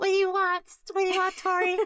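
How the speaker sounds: tiny, very high, small little voice. Retelling a fight between Tori and Sam, the speaker quotes Sam: small voice. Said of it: "she has a small voice".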